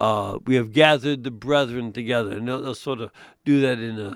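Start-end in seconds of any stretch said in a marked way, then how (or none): none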